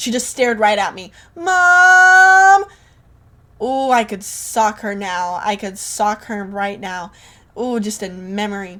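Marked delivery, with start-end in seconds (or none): 1.3-2.6 very high, very loud shrill call with stretched word. Retelling how a girl told on her to her mom: imitating Maddie tattling. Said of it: "She literally said it like that".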